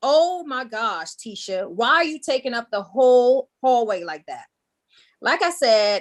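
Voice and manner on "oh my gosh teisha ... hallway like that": put-on loud, called-out taunting yell. Retelling what a girl in a packed school hallway yelled at her, imitating a loud yell. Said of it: "yelled out really loud".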